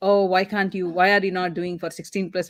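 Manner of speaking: usual speaking voice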